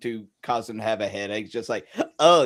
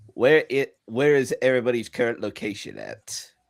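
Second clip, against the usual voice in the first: ordinary delivery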